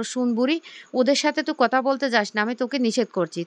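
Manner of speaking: ordinary delivery, nothing marked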